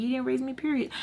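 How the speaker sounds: smart-aleck muttering under the breath. Retelling a fight with mom, muttering under breath. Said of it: "under my breath".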